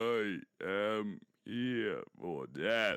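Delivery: very slow, ominous, menacing character voice. Voicing a character during character creation: scary character voice. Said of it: "keeping that voice up".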